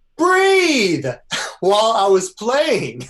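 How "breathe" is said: high, loud yell of "breathe". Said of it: "and she yells".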